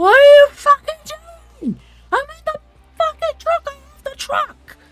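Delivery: very high, very loud, shrill, rushed, frantic, panicked yelling. Voicing a character gripping the truck wheel, trying not to crash: shouting in panic. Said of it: "Nux shouts out".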